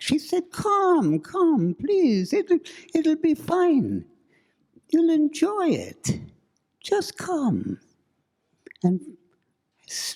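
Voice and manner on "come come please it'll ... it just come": put-on Middle European accent. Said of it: "She had this strange Middle European accent".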